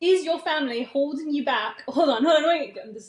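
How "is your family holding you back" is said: failed put-on British accent coming out cowboy. Saying the episode title in an attempted British accent, attempted British accent that sounds cowboy. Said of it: "You sound like a cowboy".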